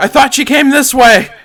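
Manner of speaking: high, loud startled call in character voice.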